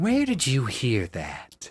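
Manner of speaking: pointed, demanding, direct and close probing delivery. Voicing a character who leans down to a child: asked under her breath. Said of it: "under her breath, she asks".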